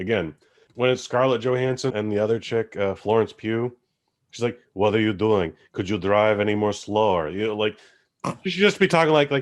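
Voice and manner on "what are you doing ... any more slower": put-on Russian-accented English. Mocking an actor's line from a film: imitating put-on Russian accent. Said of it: "They're Russian".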